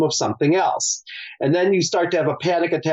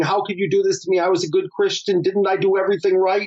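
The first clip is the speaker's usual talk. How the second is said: mild, reined-in, contained protesting outcry; 4 semitones higher than usual. Describing a woman under the guillotine, imitating someone screaming at God. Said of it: "she's screaming at God and saying".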